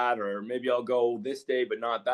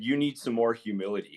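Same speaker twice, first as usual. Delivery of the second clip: serious, very stern tone. Retelling what a man said on a phone call: imitating a stern tone. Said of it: "he said it very sternly".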